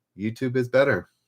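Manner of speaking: ordinary talk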